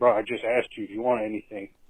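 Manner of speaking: mock teasing, mocking tone poking fun. Retelling a reply to a customer, imitating own mocking tone. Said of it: "I was kinda making fun of him".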